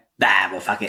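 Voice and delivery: resigned zombie voice, losing interest. Describing zombies as the car drives off: imitating zombies giving up. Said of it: "you do see them kinda go".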